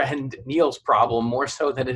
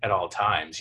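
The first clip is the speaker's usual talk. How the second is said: mock seductive voice, lower and quieter; 6 semitones lower, 4 dB quieter than usual. Repeating how another speaker said a line: imitating a seductive tone. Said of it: "You said it very, like, seductively".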